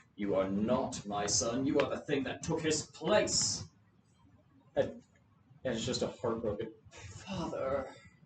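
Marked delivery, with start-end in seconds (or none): 0.2-3.6 horrified and angry character voice. Game master voicing Donovic as he faces Doru, horrified and angry. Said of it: "looks like horrified and angry and goes".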